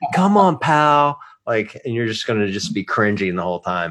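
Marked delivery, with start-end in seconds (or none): 0.1-1.2 put-on encouraging cheer, higher. Teasing another speaker about losing, imitating Noah cheering someone on. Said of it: "he's gonna be standing over you going".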